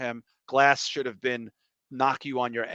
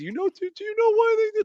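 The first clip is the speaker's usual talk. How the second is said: put-on bawling voice, higher and louder; 6 dB louder than usual. Retelling a movie scene, imitating Donnie Wahlberg: imitating Donnie Wahlberg bawling. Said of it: "he's fucking bawling".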